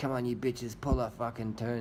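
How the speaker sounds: put-on Russian accent. Commentating on a bike race, voicing Sagan in a Russian accent. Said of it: "in his best Russian accent".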